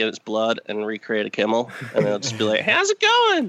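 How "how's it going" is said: put-on very high-pitched, childlike squeaky voice. Imitating a recreated Ryan saying hello: high-pitched voice for Ryan. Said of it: "I do a high-pitched voice for Ryan".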